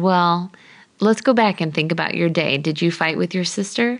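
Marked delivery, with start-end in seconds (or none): none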